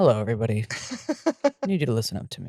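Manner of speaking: calm public radio storyteller delivery, swooping pitch. Retelling how Lee addressed everyone before a story, Ira Glass voice. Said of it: "put on his Ira Glass voice".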